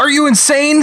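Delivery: high, rushed, panicked voice.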